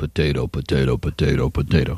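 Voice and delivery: very low put-on rumble, like an idling engine. Saying potato four times fast like the actor: James Coburn voice. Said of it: "do it like the actor James Coburn".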